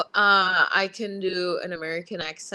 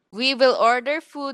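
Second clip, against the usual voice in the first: first attempt at put-on Russian accent, pitched up; 5 semitones higher than usual. Urged by a peer to try a russian accent while announcing food plans: attempted russian accent. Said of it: "you can pull off a Russian accent".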